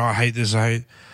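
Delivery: plain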